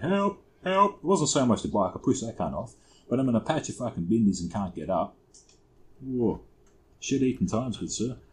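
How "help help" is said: high-pitched mock yelling. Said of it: "And I fucking yell out".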